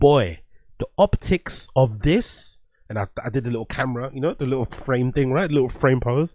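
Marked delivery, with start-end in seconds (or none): 0.0-2.6 put-on booming, very loud, very slow announcer voice. Retelling what the speaker said to a man chasing kids: retelling saying it very loud. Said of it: "I said it mad loud".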